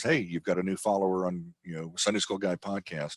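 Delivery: ordinary delivery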